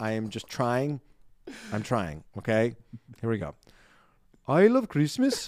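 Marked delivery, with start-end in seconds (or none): 4.5-5.5 very high-pitched, bad, fake Icelandic accent. After apologizing to Icelandic listeners, speaker attempts the line; bad Icelandic accent. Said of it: "Read the next line with an Icelandic accent".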